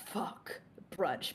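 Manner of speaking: muttered under the breath. Voicing a character muttering about a brunch invitation: muttered under her breath. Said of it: "Alexis under her breath is just like".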